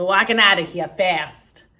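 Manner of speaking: put-on booming East Coast American accent at very loud volume. Retelling a movie scene, imitating Daniel Day-Lewis's East Coast accent. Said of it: "Daniel Day-Lewis's accent is so, like, East Coast".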